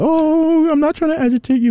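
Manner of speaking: very high-pitched, mocking put-on voice. Mocking a co-host by imitating an ex: mocking imitation of an ex. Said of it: "You sound like every ex I've ever had".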